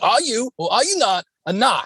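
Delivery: put-on heavy, broad Boston accent. Retelling a scene where a family member questions a woman, in a thick Boston accent. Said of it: "they have those thick Boston accents".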